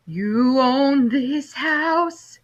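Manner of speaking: eerie, rasping, spooky ghost voice. Reading a story: a ghost turns to the narrator and asks, in an eerie, raspy voice. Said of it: "in an eerie, raspy voice".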